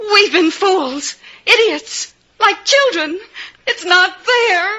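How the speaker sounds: tearful voice. Searching another speaker's pockets and finding nothing there: crying. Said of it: "don't cry, baby".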